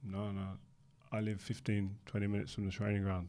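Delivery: flat, serious delivery. Quoting a man's answer to the speaker's question, retelling a deadpan reply. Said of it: "That's deadpan serious".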